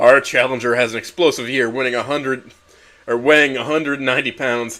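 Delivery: plain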